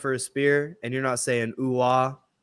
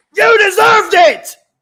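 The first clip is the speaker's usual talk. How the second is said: very high, very loud, shrill put-on shout; 15 dB louder than usual. Reenacting a wrestling argument, playing Hangman: acting out Hangman yelling. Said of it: "You're play Hangman and I'll play Swerve".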